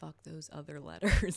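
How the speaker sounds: whispering. Upset by disturbing letters, whisper the swear out of fear of YouTube. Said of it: "I have to whisper".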